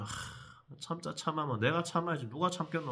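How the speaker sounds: soft mutter under the breath, holding back anger.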